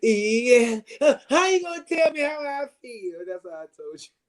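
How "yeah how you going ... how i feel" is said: mocking, high, tearful voice. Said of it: "'Cause she said".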